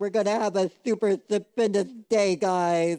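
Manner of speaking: bright, cheerful, high-pitched excited character voice. Talking about a favorite family member's voice acting, quoting his line: imitating Ani's voice. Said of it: "every time I hear his like voice acting and he's like".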